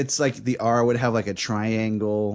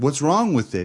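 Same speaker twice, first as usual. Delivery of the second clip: acted, hard, tough-guy retort voice; 3 semitones higher than usual. Retelling a classmate's reply to a teacher, imitating someone acting tough. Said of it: "Andres tried to get all hard".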